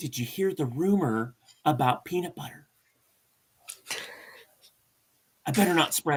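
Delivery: sly, secretive, conspiratorial gossip voice. Showing how he'd come up close and say it, conspiratorial tone. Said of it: "I'll get really conspiratorial".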